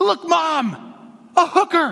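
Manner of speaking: very high, loud, thrilled exclamation. A mother retells her child's shout from the car, imitating Sam's excited exclaim. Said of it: "exclaims in a very excited voice".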